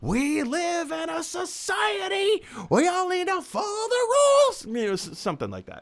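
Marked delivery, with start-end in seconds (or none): 0.0-4.6 very high, slow, impatient tone. Retelling a payphone scene, quoting a sitcom character: imitating George Costanza's impatience. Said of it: "in his impatient way".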